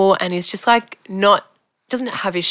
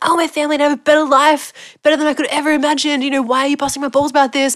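mock screaming, much higher pitch; 7 semitones higher than usual. Retelling a man's outburst at being told he let the kid down, imitating someone screaming. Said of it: "he starts screaming".

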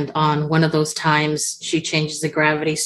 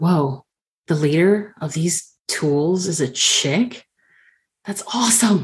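surprised gasp, much slower. Redeemer reacts as a fireball zooms past, gasping in surprise. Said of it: "Redeemer will kind of gasp and be like".

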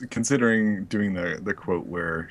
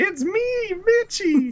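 bad, very high, unconvincing put-on child voice. Recounting a scene where a boy calls out for his brother, unconvincing kid's voice. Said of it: "Tony just does a kid's voice".

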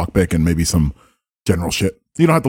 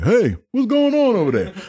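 very high, swooping guard-style call-out. Voicing a guard who turns and runs toward a door-picker: voicing the guard calling out. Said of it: "the guard like".

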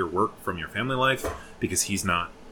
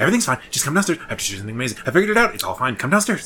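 put-on frantic pleading, higher-pitched and louder; 5 semitones higher, 6 dB louder than usual. Retelling a mother calling her son downstairs: imitating a frantic plea.

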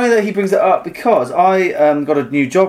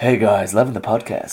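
put-on American accent; 5 semitones lower, 4 dB quieter than usual. Voicing a brother's emailed podcast message, put-on American accent. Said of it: "He's American, right?".

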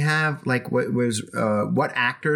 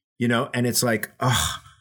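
plain

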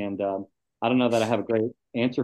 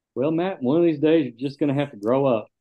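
put-on voice with a slight touch of Southern accent; 4 semitones higher, 4 dB louder than usual. Retelling advice a mentor once gave, in a put-on Jay Wayne voice. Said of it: "Is that your Jay Wayne voice?".

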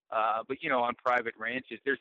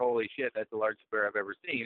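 usual speaking voice

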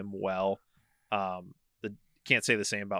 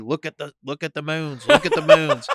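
very loud, high, swooping yell; 7 semitones higher, 13 dB louder than usual. Retelling an actor's green screen story: imitating George Lucas yelling. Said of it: "George is yelling at me".

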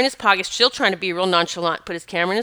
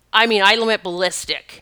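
ordinary talk, nothing marked

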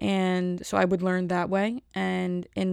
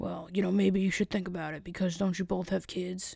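put-on mild, soft older man manner of talking; 5 dB quieter than usual. Retelling what an older man said to two coworkers, imitating an older man. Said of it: "he talks like this. He's an older man".

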